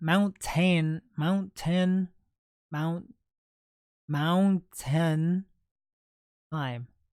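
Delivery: mountain said with a Midwestern accent. Repeating the phrase mountain time several times: midwestern accent. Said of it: "Midwestern accent, I'm telling you".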